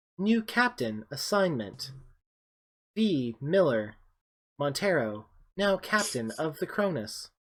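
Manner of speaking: put-on ship computer voice. As the players walk into the room, the narrator voices Mother's voice over comms. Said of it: "Mother's voice comes over the the comms".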